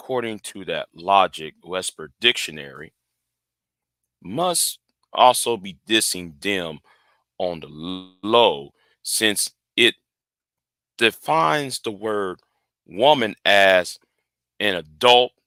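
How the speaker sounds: cool, collected, calm, low, quiet reading voice. Rereading a text aloud after stumbling over it, in a calm, cool, collected manner. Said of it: "let me read it in a calm, cool, collected manner".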